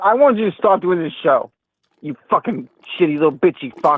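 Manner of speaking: aggressive, angry, hostile voice. A caller on the show rants at the host: aggro, angry. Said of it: "you're the one kind of being like really aggro right now".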